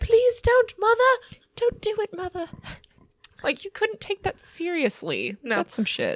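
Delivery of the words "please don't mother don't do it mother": put-on little British child voice, very high-pitched. Riffing on a little kid pleading with their mother, in a british kid voice. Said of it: "It has to be a British kid".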